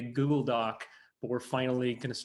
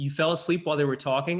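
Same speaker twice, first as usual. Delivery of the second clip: usual speaking voice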